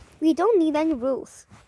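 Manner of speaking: ordinary delivery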